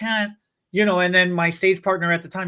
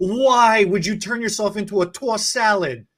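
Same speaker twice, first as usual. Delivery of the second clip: loud disbelieving outburst; 3 semitones higher, 3 dB louder than usual. Speaker retelling what they blurted out during a quiet show: retelling a loud WTF outburst. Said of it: "the loudest audible W T F is wrong with you".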